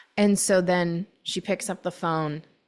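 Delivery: ordinary talk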